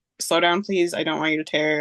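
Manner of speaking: ordinary delivery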